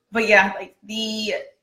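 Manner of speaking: normal talking voice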